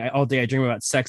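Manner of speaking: normal talking voice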